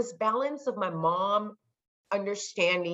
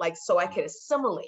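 ordinary talk, nothing marked

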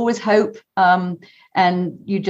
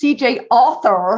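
put-on American accent; 3 semitones higher than usual. Guest giving their website for the listeners to understand, American accent. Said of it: "I better say that in an American accent".

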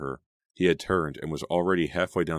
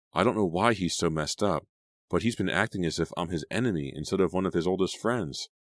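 plain reading voice

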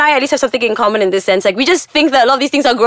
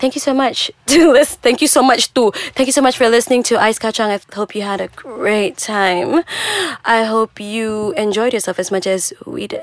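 sexy, sultry telemarketer voice. Asked to do the show's closing lines, in a sexy telemarketer voice. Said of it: "Do the closing thing with your sexiest telemarketer voice".

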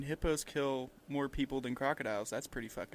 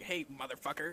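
littlest monkey voice, tiny and quieter; 4 dB quieter than usual. Joking about a monkey that hates everybody, voicing it: littlest monkey voice. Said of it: "That monkey has the littlest fucking voice".

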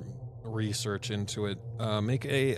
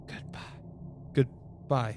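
distinct hushed whisper; 2 semitones higher than usual. The storyteller voices her goodbye as the player walks out, in a distinct whisper. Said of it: "a very distinct whisper".

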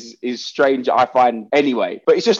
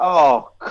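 crestfallen, gutted, let-down announcer-style voice. Recalling an announcer's reaction, the speaker imitates his gutted disappointment. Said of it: "it's just a disappointment in his voice".

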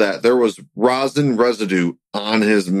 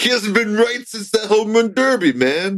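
very high-pitched, bad, fake New York accent; 11 semitones higher than usual. Mocking a Mets fan's take on Pete Alonso, in a bad New York accent. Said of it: "there's a really bad New York accent".

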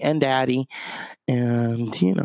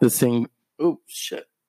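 ordinary talk, nothing marked

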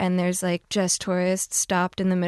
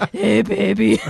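loud, very husky voice; 2 semitones higher, 7 dB louder than usual. Recalling the voice that ruined a childhood: really husky voice. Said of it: "it was like this really husky".

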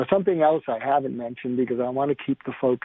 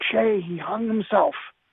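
high-pitched scream; 8 semitones higher than usual. Retelling how the mother-in-law screamed back at him by phone, retelling a scream. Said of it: "she screams back at him".

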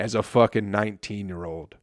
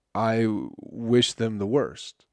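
plain

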